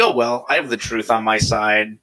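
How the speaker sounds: ordinary talk, nothing marked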